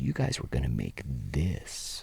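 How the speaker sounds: mocking, low whispered voice.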